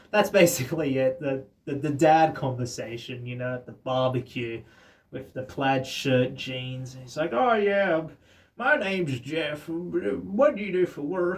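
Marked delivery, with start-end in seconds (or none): 7.4-11.4 bad Texan accent, high, slow, drawn-out what. Acting out a dad at a barbecue introducing himself, in a broken Texan accent. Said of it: "I'm doing a broken Texan accent".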